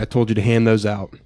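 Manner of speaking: ordinary talk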